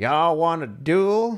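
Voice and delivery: loud, high-pitched cartoon cowboy voice. Voicing a made-up character in a trench coat who walks in: cartoon cowboy voice. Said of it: "like cartoon fucking cowboy".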